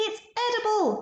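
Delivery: shrill, delighted shriek. The two scientists cry out together, shrieking with delight. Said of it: "they shrieked".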